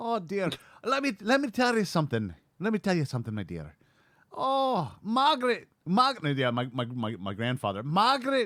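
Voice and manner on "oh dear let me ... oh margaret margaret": heavy Scottish brogue, very high, swooping. Speaker imitating his grandfather's Scottish mannerisms, in a thick Scottish accent. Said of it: "very very thick Scottish accents".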